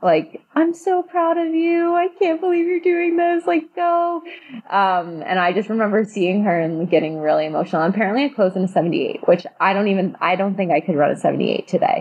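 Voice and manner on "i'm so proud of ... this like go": play-acted, very high, tearful, crying voice. Retelling someone cheering during the race: imitating Shelby crying. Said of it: "literally, like, crying".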